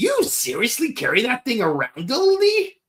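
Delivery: put-on high, swooping cartoon character voice. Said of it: "that was probably my best Eddie impression".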